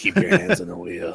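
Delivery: whispered, breathy, put-on creepy voice. Quoting a line from the weirdo character: put-on creepy voice. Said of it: "That's your creepy voice".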